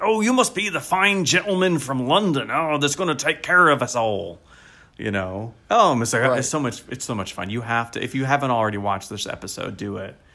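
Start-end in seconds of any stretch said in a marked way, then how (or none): 0.0-4.4 put-on West Country accent, higher pitch. Recalling a character from an episode where everyone does the accent, in a West Country accent. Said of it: "everyone's doing the West Country accent".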